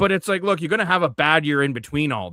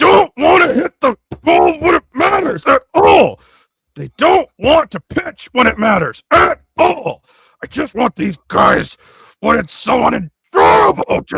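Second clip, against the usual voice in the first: acted, very loud, shrill, high-pitched, booming angry rant; 11 semitones higher, 9 dB louder than usual. Ranting about Jays players not hitting, in Key's mock-angry voice. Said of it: "I gotta get into Key's angry voice".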